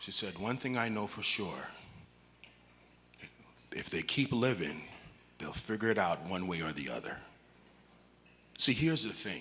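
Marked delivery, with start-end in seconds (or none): 0.4-7.1 barely voiced, hushed murmur under the breath. Retelling what the mother, thought asleep, said: imitating speaking under bated breath. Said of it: "under bated breath".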